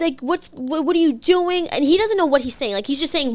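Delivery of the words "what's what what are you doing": mock, toned-down, mild yell. Retelling a man yelling at them in the street: retelling a yell. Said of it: "Yelling in the street".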